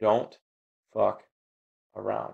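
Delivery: play-acted grave, firm, bold, dead serious delivery. Retelling what a stranger on the sidewalk said: imitating a serious, bold tone. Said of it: "very seriously looked me right in the eye and said in very bold tones".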